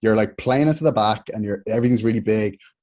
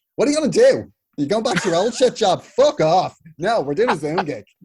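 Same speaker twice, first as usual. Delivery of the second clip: blunt delivery at very high pitch; 9 semitones higher than usual. Retelling what Joanne McNally said over Christmas: imitating Joanne McNally. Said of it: "Great impression".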